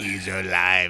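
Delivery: loud put-on mechanical robot voice. Doing a self-admitted poor impression of a robot: put-on robot voice. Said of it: "That was my impression of a robot".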